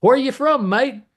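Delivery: very high put-on English accent. Retelling ordering at a counter, the speaker quotes the counterman in an attempted English accent. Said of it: "I'm gonna have to try to imitate an English accent".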